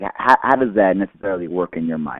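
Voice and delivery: plain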